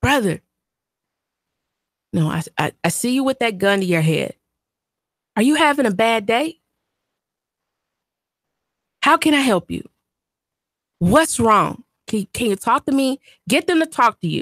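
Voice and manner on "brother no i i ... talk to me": sweet, soothing, gentle, caring, concerned voice. Demonstrating how to talk someone through their problems, in a gentle caring concerned voice. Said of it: "in a caring and concerned voice. Like this".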